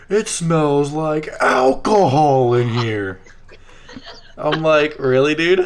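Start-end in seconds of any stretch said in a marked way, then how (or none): 0.1-3.2 slow, drawn-out shout. Retelling how a little brother ratted the speaker out with mom behind him, retelling a yell. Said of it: "He yells".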